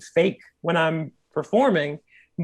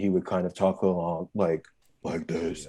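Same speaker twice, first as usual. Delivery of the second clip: put-on very low bass voice, lower and quieter; 12 semitones lower, 8 dB quieter than usual. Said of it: "a super bass".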